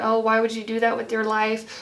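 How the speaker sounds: ordinary talk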